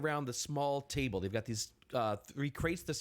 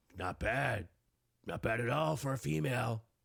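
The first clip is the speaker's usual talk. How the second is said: half-orc woman voice, lower; 4 semitones lower than usual. Voicing a half-orc eyeing up a player: voicing a half-orc woman. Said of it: "the half orc looks over and she's like".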